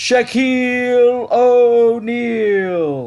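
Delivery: very high-pitched, drawn-out, stretched arena call. Introducing a player like the Bulls announcer: bad Tommy Edwards impression. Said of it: "didn't do, uh, former Chicago Bull public address announcer Tommy Edwards any favors".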